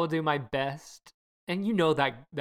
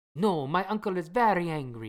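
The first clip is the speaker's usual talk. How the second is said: put-on Italian accent on English; 3 semitones higher than usual. Playing Luca in an acted scene with London, the speaker uses an Italian accent. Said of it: "I am so sorry for my Italian accent that is about to happen".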